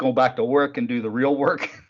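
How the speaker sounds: ordinary talk, nothing marked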